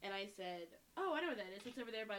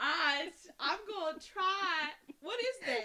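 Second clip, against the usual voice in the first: accent that sounds Southern US; 9 semitones higher, 12 dB louder than usual. Trying out accents for a listener, drifting into an American Southern accent. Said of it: "That sounds Southern".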